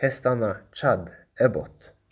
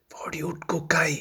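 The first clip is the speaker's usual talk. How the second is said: high-pitched, hushed whisper; 5 semitones higher, 4 dB quieter than usual. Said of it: "Viskade hon".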